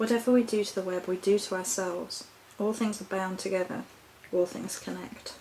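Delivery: ordinary delivery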